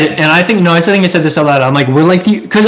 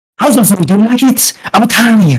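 put-on odd, weird delivery, higher and faster; 4 semitones higher than usual. Retelling how a man came up to ask about the food, imitating his weird way of talking. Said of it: "He said it in such a weird way".

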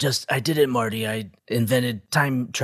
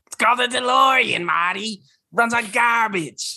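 put-on shrill comedian voice, pitched higher; 13 semitones higher, 4 dB louder than usual. Answering a request to voice Doc as Gilbert Gottfried: Gilbert Gottfried voice. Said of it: "what would, uh, Gilbert Godfrey do as a, a Marty or a, or a Doc?".

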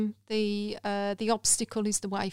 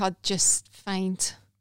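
usual speaking voice

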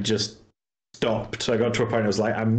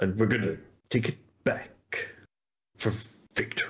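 put-on commanding voice, quieter; 5 dB quieter than usual. Showing the voice he could not stop doing: Zavala voice from Destiny. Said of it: "he talks like this".

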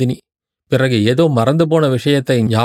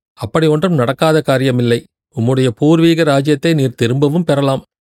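ordinary delivery

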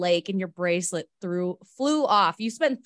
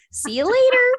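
very high-pitched, loud voice; 8 dB louder than usual. A podcast host mocks their own sign-off from the episode, imitating own high-pitched sign-off. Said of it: "I said it so high pitched".

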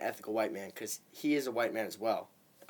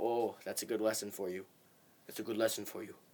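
soft, gentle, grandfatherly voice; 5 dB quieter than usual. Retelling how another guy gave advice after small mistakes: imitating a grandfatherly tone. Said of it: "he would kinda say it like he was, like, my grandfather".

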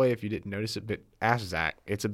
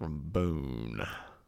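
very low, soft voice; 7 semitones lower, 8 dB quieter than usual. Speaker repeats where the other person is from: low-toned. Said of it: "Why do you say it with such a low tone?".

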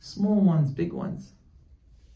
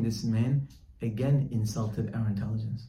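ordinary talk, nothing marked

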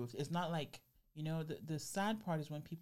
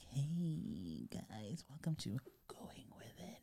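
drawn-out, slow, breathy ASMR whisper. Suggesting trying asmr, then showing it: mock asmr whisper. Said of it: "talk like this".

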